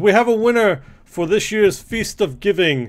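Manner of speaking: grand, high, loud proclaiming voice.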